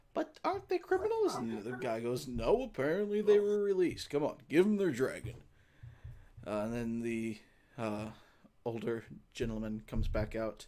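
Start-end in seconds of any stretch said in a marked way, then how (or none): 0.2-1.4 very high, feminine, woman-like voice. From a room behind the desk, a woman-like voice speaks up. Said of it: "you hear a woman-like voice".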